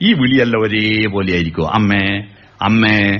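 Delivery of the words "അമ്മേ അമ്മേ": low, flat, unchanging amme each time. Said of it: "അമ്മേ എന്നല്ല വിളിക്കുക".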